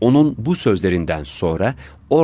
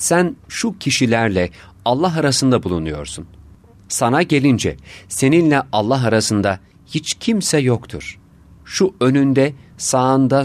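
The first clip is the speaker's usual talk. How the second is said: ordinary delivery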